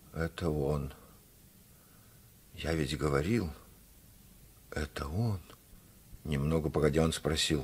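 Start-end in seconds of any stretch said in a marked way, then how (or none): 0.1-5.4 weak, soft, faltering babble. The narrator reads the father, sunk onto a bench, speaking to the mother: faltering mumble. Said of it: "пролепетал".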